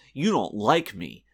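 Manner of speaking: loud, stiff, awkward, wooden, stilted delivery. Imitating a bad guest performance speaking to Wesley Crusher: imitating Brol's stilted delivery. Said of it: "in a very stilted manner".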